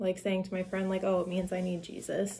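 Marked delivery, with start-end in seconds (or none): 1.0-2.4 mock teasing, half-joking scoffing tone. Retelling a joke said to a friend: imitating own mocking joke. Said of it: "mocking him".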